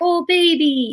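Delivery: put-on very high-pitched, doting, cooing baby talk. Showing the mollycoddling tone to avoid with a startled puppy: mollycoddling baby talk. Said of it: "I don't mollycoddle. I don't get all like".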